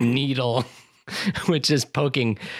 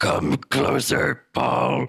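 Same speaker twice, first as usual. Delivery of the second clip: monstrous crone rasp, rough and creaky, from the throat. Taking on a vocal challenge, reenacting the Bene Gesserit mother calling Paul, nightmare voice. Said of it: "this nightmare voice that has crawled out of this woman's throat".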